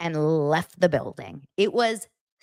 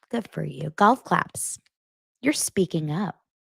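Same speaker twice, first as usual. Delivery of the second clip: put-on condescending, patronizing voice. Retelling a reality show argument, imitating Tamra, condescending. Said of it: "How condescending".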